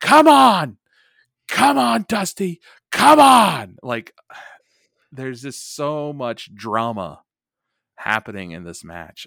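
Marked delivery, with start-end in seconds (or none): 0.0-3.8 shrill, booming, very high, very loud, drawn-out scream. Describing a wrestling match, acting out Flair yelling at Dusty: imitating Flair screaming. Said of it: "Flair just screams at him".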